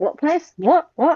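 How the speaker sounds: high, baffled Scottish voice, whats fired off. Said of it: "They always go".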